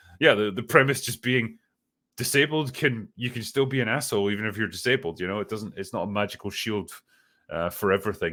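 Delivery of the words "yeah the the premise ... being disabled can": plain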